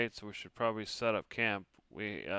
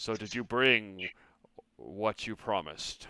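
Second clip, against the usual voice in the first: large, looming monster-like voice. Storyteller voicing a mysterious speaker addressing a character, in a booming voice. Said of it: "you hear a booming voice".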